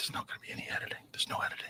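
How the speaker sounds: soft, hushed whisper under the breath. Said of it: "I'm like".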